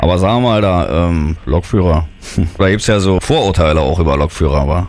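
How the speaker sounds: put-on woman's voice, low, gruff and manly.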